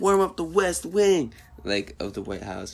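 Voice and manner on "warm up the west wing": shrill, very high, loud scream. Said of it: "and he was screaming".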